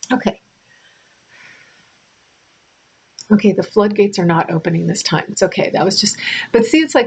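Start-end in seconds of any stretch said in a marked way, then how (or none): 0.1-5.7 teary, choked-up voice, close to tears. Speaker trying to hold back tears mid-talk, choked up, teary. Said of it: "I'm such a sympathetic crier".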